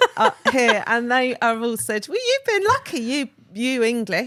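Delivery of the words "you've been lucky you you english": put-on Scottish accent, swooping and sing-song. Retelling what people told him, in a scottish accent. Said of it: "do it again in the accent".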